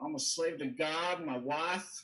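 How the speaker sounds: put-on Texas-accented delivery. Retelling a man's shocking statements, in his texan accent. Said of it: "he had this like Texan accent".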